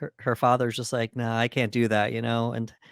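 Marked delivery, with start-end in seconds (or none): none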